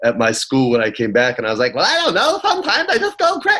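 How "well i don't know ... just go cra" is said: very high cartoon voice, pitch swooping and swinging wildly. Retelling showing off for kids at school: Roger Rabbit voice. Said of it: "he can do Roger Rabbit".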